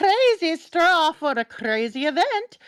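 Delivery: put-on German accent, pitched very high. Joking about a crazy straw, in a German accent. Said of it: "German accent".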